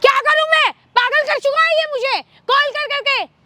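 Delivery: very high, raging, furious screamed outburst. Confronted over money she won't pay, a woman answers back, shouting angrily. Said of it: "चिल्ला क्यों रही है?".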